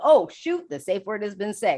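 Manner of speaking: normal talking voice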